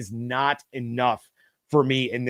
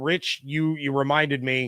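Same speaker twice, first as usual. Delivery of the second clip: ordinary delivery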